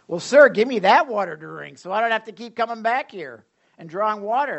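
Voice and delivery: a woman's loud, mocking, sarcastic retort. Retelling a story, voicing the woman's reply to him as a mock-sarcastic woman's reply. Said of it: "I can almost see her like sarcastically saying this".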